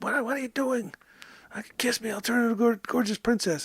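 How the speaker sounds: small smothered frog voice. Voicing the frog stuck in his pocket, in a little muffled frog voice. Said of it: "in the little muffled voice".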